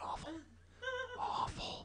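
hushed, breathy whisper, barely there. Speaker describing being stuck in one building all week, whispered. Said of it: "I have to whisper awful".

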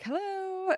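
high, called-out voice. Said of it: "And I'm like".

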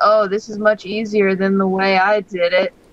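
ordinary talk

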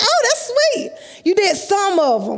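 dry, mock-sweet sarcasm in a swooping high voice. Retelling what the doctor said about the knee: imitating a sarcastic doctor. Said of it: "He was really sarcastic".

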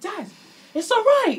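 high, loud, really aggressive push. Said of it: "Really aggressively".

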